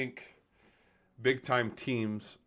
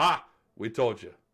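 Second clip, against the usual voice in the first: loud, gloating, crowing jeer. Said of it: "we can all laugh about it and go".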